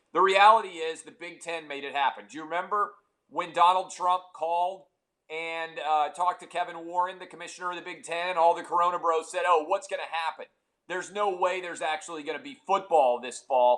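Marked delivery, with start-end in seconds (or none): none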